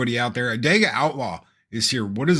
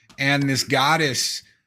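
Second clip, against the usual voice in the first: normal talking voice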